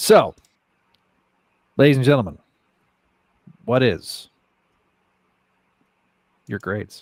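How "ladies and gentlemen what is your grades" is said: halting delivery filled with pauses. Asking ladies and gentlemen for their grades, deliver it with a Shatner-style dramatic pause. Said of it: "That was such a Shatner pause".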